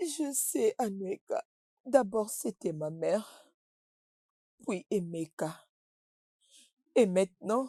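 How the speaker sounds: whispering through tears. A character, told by a friend to stop crying, answers while crying. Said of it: "Arrête de pleurer".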